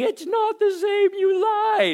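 very high, drawn-out screaming tantrum meltdown. Retelling a girl's meltdown on tasting ice cream, imitating her screaming. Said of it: "she's just screaming".

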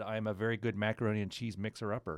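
normal talking voice

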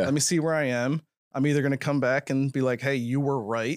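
ordinary talk, nothing marked

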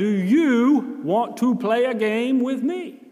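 loud, slow, stretched speech. Retelling asking a child to play a game: imitating speaking loudly and slowly. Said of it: "I spoke loudly and I spoke slowly".

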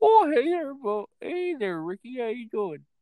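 sing-song, pitched very high. Talking about a guy with Bubbles eyes, then trying a bad Bubbles impression. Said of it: "I can't do a good Bubbles impersonation".

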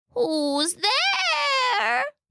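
very high, swooping put-on granny voice. Narrator reading the wolf in grandmother's bed answering the knock, faking a grandmother voice. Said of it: "using his best grandmother voice".

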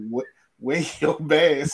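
down-home Southern fried drawl. Imitating a man from a video seen on Twitter: imitating a Southern fried accent. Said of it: "that real Southern fried, uh, accent".

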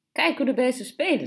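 cheerful. In a dark, hot stairwell with cockroaches on the walls, she remarks cheerfully. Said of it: "zei ze vrolijk".

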